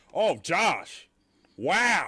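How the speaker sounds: dripping sarcasm, high and swooping. Showing how not to give criticism: sarcastic tone. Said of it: "don't just be, like, sar-, sarcastic".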